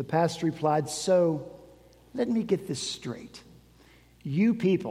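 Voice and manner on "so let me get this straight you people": put-on condescending, patronizing voice. Retelling a pastor's reply to a request to use a building: imitating a condescending pastor. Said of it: "with a voice oozing with condescension".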